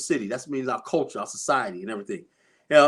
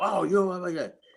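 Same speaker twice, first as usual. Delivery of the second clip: put-on sly whisper, higher pitched; 4 semitones higher than usual. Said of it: "Sly whispers aren't loud".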